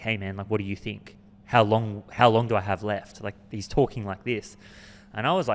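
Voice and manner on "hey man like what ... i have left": ordinary talk, nothing marked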